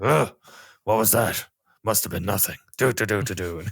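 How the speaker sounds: gruff, rough video-game guard style voice. Recalling the voice actor of the guards in Thief, gruff Thief guard voice. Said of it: "does the exact like gruff voice".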